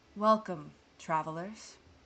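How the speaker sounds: warm, gentle, kindly tone. A narrator voices a woman greeting the travelers, with a soft smile. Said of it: "with a soft smile goes".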